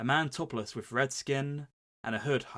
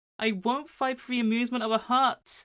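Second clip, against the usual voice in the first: very high, loud sassy voice; 11 semitones higher, 6 dB louder than usual. Repeating the other speaker's take on a Luke line, sassy Pinocchio voice. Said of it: "the sassy like Pinocchio".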